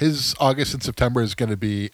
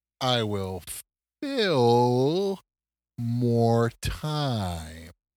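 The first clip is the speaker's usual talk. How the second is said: very slow, halting, broken-up delivery. Podcast host trying to fill the remaining minutes; talking really slow. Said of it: "If I talk really slow".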